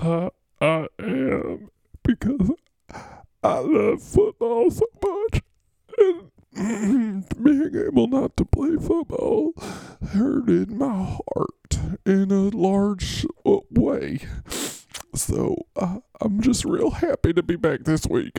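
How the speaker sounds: very high, wavering, blubbering tearful speech. Answering someone who asks you questions as Mr. Golf and says they are starting to cry too, crying. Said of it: "because you're crying now".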